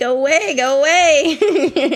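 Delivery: mock slow, dragged-out voice. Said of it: "waving him away as I'm like".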